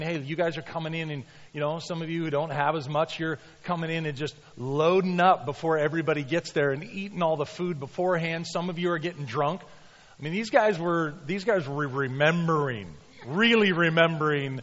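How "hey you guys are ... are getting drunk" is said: plain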